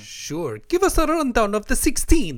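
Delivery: accent from Iran. Answering a co-speaker who asks to do a rundown of the 16, in a put-on Iranian accent. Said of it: "Was that your Italian accent? That was my Iranian".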